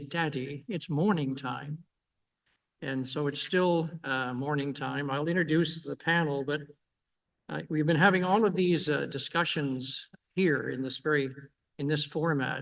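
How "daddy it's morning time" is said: put-on English accent. Father retelling what his little son used to say to him, in an English accent. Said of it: "in an English accent".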